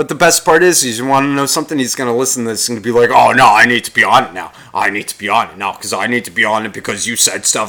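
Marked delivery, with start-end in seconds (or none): 3.1-7.7 grumbling, protesting, put-out complaining tone. Imitating Mikey, who will hear the recording: imitating Mikey complaining. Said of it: "so stop fucking complaining".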